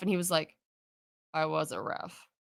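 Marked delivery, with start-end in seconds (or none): 1.3-2.2 play-acted dry deadpan, very quiet and flat. Recapping a video, the speaker quotes a man's answer about being a ref, imitating Maroon's deadpan. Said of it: "Maroon's deadpan when they ask him".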